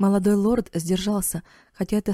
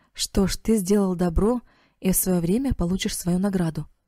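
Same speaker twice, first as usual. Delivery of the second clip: plain reading voice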